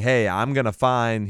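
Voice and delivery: ordinary talk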